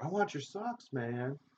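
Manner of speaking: high mocking shout, put-on. Telling the other speaker how he kept yelling at the keeper, imitating someone yelling. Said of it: "You kept yelling at the keeper".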